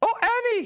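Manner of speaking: squeaky, very high-pitched sidekick voice. Doing impressions of Star Wars characters for chat: Jar Jar Binks voice. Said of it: "the Jar Jar Binks".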